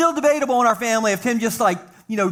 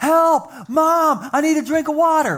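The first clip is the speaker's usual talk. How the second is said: put-on half-yell, mild, pitched up; 6 semitones higher than usual. Telling a family story, the speaker acts out the brother's call to mom: retelling a yell. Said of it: "he's yelling".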